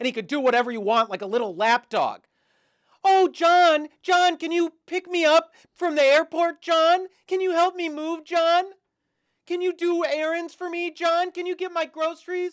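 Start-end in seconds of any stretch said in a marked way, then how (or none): 3.0-12.5 mock bossy demanding voice, higher and louder. Mocking a girlfriend who bosses her boyfriend around: mocking imitation of bossy girlfriend. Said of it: "boss him around like your little bitch boy".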